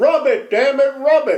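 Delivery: high, loud, drawn-out hollering. Retelling how the pitcher yelled over after a hit: imitating a pitcher yelling. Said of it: "Little yells over".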